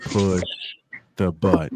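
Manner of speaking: slow, deliberate, each word drawn out. Retelling how someone repeated a line: imitating saying it slowly. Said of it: "then he just said it slowly".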